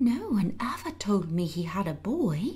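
gasped, gasping delivery. Mary, told by the boy that her uncle is his father, gasped. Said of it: "gasped Mary".

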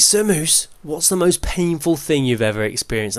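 usual speaking voice

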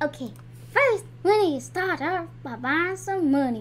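talking like a country person. Starting off the first step, sounding like a country person. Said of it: "I sound like a country person".

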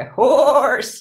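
squeaky, playful goat voice. The speaker demonstrates the kids' repetition game: saying it like a goat. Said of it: "Or say it like a goat".

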